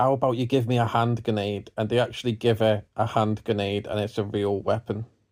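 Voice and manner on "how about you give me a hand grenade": put-on sarcastic tone. Retelling what a character asks for: imitating a sarcastic request. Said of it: "she says sarcastically".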